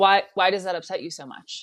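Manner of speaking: judgmental, disapproving, critical, faultfinding tone. Showing how the same question sounds filled with judgment: judgmental critical question. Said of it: "ask that same question, but filled with judgment".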